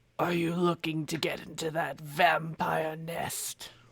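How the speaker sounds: growling, hushed half-whisper. Voicing a hidden figure who speaks to the players: half-whispery growl. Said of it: "in a whispery growl".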